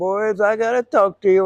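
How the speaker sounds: angry outburst. Retelling how he got real mad and called the boys: mock-angry retelling. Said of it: "he got real mad".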